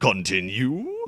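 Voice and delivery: put-on video game announcer voice. Opening a game menu, the speaker says the option aloud, Super Smash Bros. announcer voice. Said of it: "it makes me want to say it like the uh, the announcer from Super Smash Brothers".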